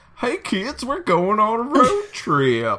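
very high, swooping, squeaky, goofy dopey dad voice. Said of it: "Why are you talking like that?".

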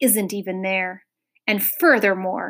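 ordinary delivery

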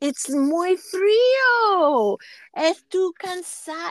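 very slow, careful Spanish. Recalling a man who practiced Spanish with the speaker: imitating really slow speech. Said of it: "he would just speak really slowly".

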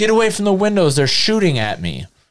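put-on high-pitched wild screaming. Retelling how an intruder screamed at the house: imitating someone screaming. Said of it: "The guy was screaming".

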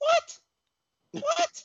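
very high-pitched squeaking voice. Reacting to a claim that the card didn't live up to the hype, imitating someone's high voice. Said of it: "Let me get my voice as high as his".

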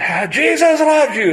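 very high, shrill, loud, far-carrying yell. Retelling a man calling out below the building: imitating someone yelling loudly. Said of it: "you can hear him all the way up".

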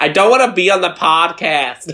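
high-pitched, fake American Valley Girl accent. Retelling what mum overheard from the study: put-on Valley Girl American accent. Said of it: "she could just hear me in the study going like".

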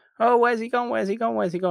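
put-on, very high shouting and calling out. Retelling a movie scene where everyone calls after a rider: imitating people shouting. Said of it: "they're all shouting after him".

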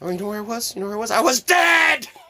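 comedian-style loud yelling. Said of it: "but he's got good yelling".

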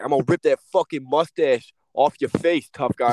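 put-on New York accent with a threatening tone. Retelling a coach threatening Lowry, New York accent. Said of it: "in his New York accent".

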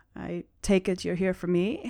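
soft, quiet, held-in, low-key voice. Narrating a game, voicing a tense woman stirring a pot: quiet voice. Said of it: "And she says quietly".

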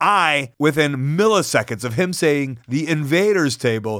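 ordinary talk, nothing marked

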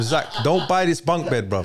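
plain

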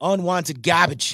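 put-on, laid-on South Jersey accent. The speaker says a phrase in their Jersey voice: New Jersey accent. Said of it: "in my Jersey voice".

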